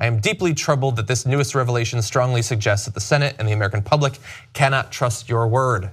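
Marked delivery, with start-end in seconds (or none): none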